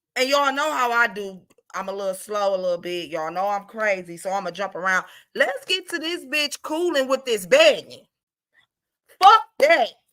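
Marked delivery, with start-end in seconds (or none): 5.4-9.9 voice rising to a loud outburst. Addressing everyone out here, in a loud voice. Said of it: "my voice got real loud on that part".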